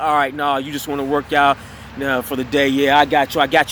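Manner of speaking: dismissive, arrogant, condescending talking-down tone. Retelling a gym worker's reply to the refusal: imitating an eye-rolling condescending reply. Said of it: "the way he was saying it, he was rolling his eyes".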